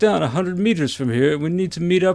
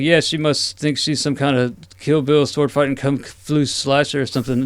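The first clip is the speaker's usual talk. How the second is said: plain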